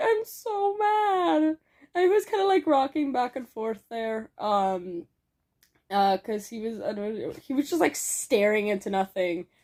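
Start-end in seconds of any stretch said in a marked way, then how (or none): 0.0-1.4 very high, small, forlorn, mopey, sad voice. Retelling what a friend said after passing out on New Year's: imitating Chris sounding sad. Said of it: "all sad".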